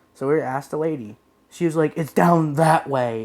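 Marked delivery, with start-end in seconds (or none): 1.9-3.2 slow, curt, dismissive, rude shop-worker tone, mocked. Retelling how the lady answered their question in the store: imitating a rude tone. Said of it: "in like a rude tone".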